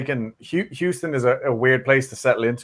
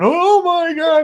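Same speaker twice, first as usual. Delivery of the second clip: piercing, very high, shrill, loud scream; 6 dB louder than usual. Recalling reacting to a weird noise while on the mic, retelling a scream. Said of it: "me screaming into the mic, going".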